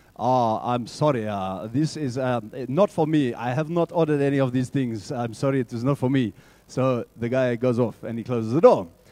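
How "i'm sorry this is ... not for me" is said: attempted South African accent. Refusing a delivery of car parts he has not ordered, trying Nelson Mandela's accent. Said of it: "I'm going to try to use his accent".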